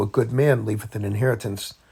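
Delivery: ordinary delivery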